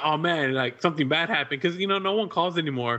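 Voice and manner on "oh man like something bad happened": normal talking voice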